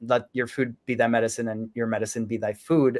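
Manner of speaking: ordinary delivery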